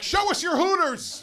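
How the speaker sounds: very high, cheeky hollered yell. Retelling yelling back at a bingo player: imitating own past yell. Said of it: "I yelled back".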